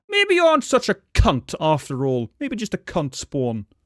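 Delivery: put-on swooping moose voice with a British accent. Voicing a happy moose that got a snack: British moose voice. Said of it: "the British moose".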